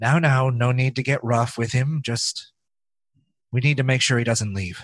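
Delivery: icy calm, very cold, emotionless. Voicing the mother in a scene: speaking very coldly. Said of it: "very coldly, like, no emotion on".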